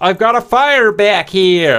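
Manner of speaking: laid-on fake American accent. Retelling a fire in the cockpit, quoting Snap, Snap's voice, American accent. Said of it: "That's my American accent for Snap".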